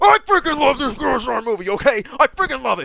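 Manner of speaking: thrilled yelling, high and very loud. In a video meant to be calm, the speaker gives up on not yelling: excited yelling. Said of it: "Screw the screw the not yelling".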